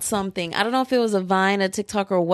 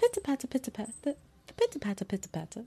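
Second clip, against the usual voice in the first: put-on British accent, quieter; 2 semitones higher, 11 dB quieter than usual. Retelling a video of a lady talking in her car: imitating a british accent. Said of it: "she has a British accent".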